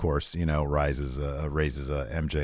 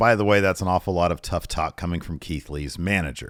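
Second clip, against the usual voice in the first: ordinary delivery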